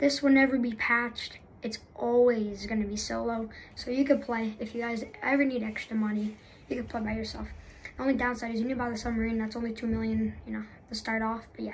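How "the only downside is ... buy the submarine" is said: rattled-off, very fast speech. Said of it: "I know I'm speaking pretty fast".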